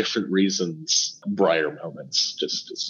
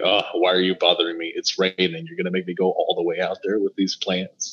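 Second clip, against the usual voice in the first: plain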